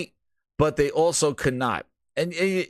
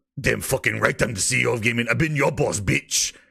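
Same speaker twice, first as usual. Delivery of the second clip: put-on evil villain voice, much lower pitch; 4 semitones lower than usual. Retelling a man's reply on a call from headquarters, in an evil villain voice. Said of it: "you get like the evil villain".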